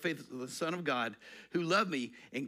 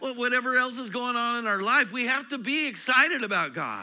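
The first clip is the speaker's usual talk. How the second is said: building up, a little louder, rising to higher pitch; 7 semitones higher, 4 dB louder than usual. Speaker addressing an audience, getting a little louder. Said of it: "I'm getting a little bit louder".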